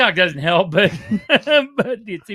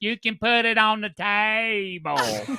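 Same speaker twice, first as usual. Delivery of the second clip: put-on drunk, heavy southern drawl, "table" drawn out; 2 semitones higher than usual. Teasing another person present about how she talks, imitating her drunk southern accent. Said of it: "what she says when she's drunk is".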